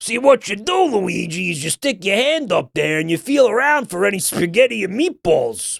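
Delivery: strained put-on character voice. Joking about a made-up Mario game, speaking to Luigi: throat-wrecking put-on voice. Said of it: "That voice obliterates my fucking throat".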